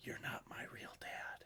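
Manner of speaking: very soft whisper, close-up, right into the ear. Voicing a character who pulls someone close, whisper in the ear. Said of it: "just in your ear whisper".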